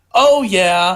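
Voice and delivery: put-on girl's voice. Speaker acting out the girl in a scene bit, imitating a girl. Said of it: "That's my impression of the girl".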